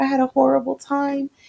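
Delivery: put-on crying, like a child. Retelling picking a girl up from school after a bus trip, imitating a crying child. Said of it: "She's like crying".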